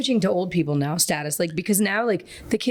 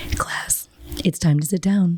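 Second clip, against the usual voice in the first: stagey, put-on announcer voice, as over a mic; 2 semitones lower than usual. Talking to the class over the microphone in a Disney voice. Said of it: "I start talking in my Disney voice".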